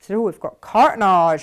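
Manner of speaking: loud put-on West Country English accent. Repeat what you said the other day about cartonnage, in a put-on West Country accent. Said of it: "I always kind of say it in a West Country accent".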